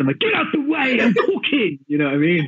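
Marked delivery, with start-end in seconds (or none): 0.2-1.8 high-pitched, aggressive yell. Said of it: "I get aggressive".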